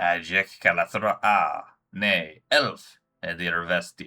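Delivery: harsh alien voice, loud, slow, very drawn out. Narrator voicing a creature speaking inside the listener's head, harsh alien voice. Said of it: "immediately followed by a harsh and alien voice".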